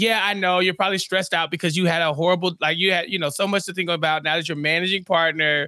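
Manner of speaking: normal talking voice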